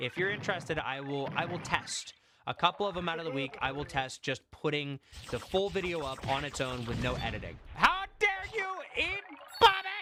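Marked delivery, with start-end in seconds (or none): 7.7-10.0 sudden, very high-pitched, loud shouted outburst. Talking to viewers in a video, before apologizing: yelling. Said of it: "Sorry, I didn't mean to yell".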